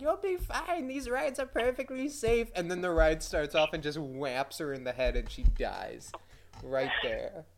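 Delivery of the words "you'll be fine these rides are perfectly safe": put-on very high, reassuring granny-like voice. Acting out a grandma calming her grandson: imitating a grandma. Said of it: "she's like".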